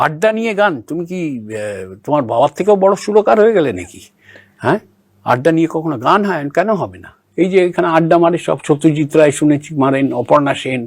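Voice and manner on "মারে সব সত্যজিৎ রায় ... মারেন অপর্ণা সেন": ordinary talk, nothing marked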